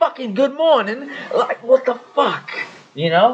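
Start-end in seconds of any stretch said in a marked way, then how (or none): 0.0-1.1 fake, very high-pitched British accent. Retelling what was said at work, in a put-on British accent. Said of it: "saying shit that I feel like British people would say".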